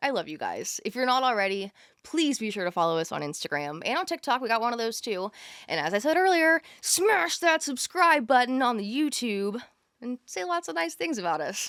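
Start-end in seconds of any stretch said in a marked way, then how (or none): 6.8-11.7 forceful, pushy, aggressive hard-sell delivery. A host addressing viewers on YouTube, aggressive. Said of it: "I don't know why that was so aggressive".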